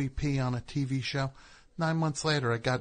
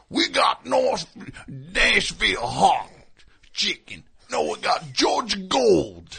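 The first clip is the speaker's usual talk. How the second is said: slow, loud, high, drawn-out character voice; 6 semitones higher, 7 dB louder than usual. Imitating an actor playing Colonel Sanders, arguing with himself: Colonel Sanders impression. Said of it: "his Colonel Sanders impression".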